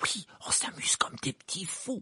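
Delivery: muffled, hushed, breathy, smothered whisper. Squashed against a wall, he answers the question: completely muffled voice. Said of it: "d'une voix complètement étouffée".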